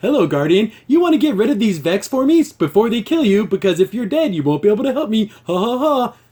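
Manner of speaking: relentlessly cheery, super happy computer voice. Imitating a game AI character greeting the player: imitating a super happy AI. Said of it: "super happy".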